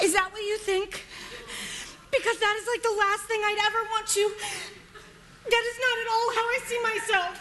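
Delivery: tearful, crying voice, words coming through tears. Character answering a group member who says they need no savior, crying. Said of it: "Are you crying?".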